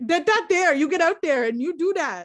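playful, mock put-on Canadian accent. Speakers joke about cutting down trees, one talking in a mock Canadian accent. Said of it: "now that we're just having our Canadian accent time".

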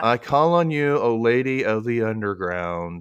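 normal talking voice

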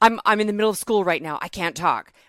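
put-on stressed voice. Retelling a phone call with a stressed friend: imitating stressed David Boreanaz. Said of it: "he sounded so stressed".

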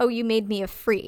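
ordinary delivery

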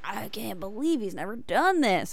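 put-on American Southern accent. Imitating what people say about him: Southern accent. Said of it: "why do you have a Southern accent?".

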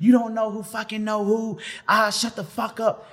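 very high, shrill yelling. Telling a story about a name-dropping friend yelling at a man: retelling a yell. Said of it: "So she yelling at him".

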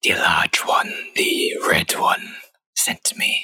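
breathy, hissing creature whisper. Voicing a creature that hisses its answer at a player: creature hissing. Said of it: "it hisses at you".

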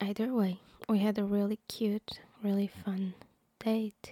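speaking in a whisper. Talking to the camera about a date, whispering. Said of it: "a normal human person who's not whispering".

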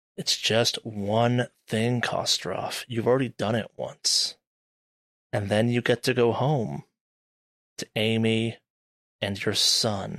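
chiding, reproachful, disapproving voice. Narrator voicing Martha Mills' face in a reflection, speaking to Kostroff, disapproving. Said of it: "looks at you disapprovingly and goes".

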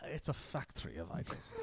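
hushed, breathy, whispered English accent. Speaker repeats a favorite Calvin quote to the other speaker, in an English accent. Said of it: "If you want to say it in the English accent".

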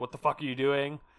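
ordinary talk, nothing marked

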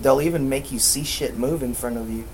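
ordinary talk

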